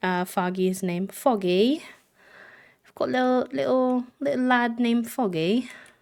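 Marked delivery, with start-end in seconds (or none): 1.1-5.7 playful put-on British accent, pitched up. Speaker introducing a little lad to viewers: british accent. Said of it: "If I do the British accent".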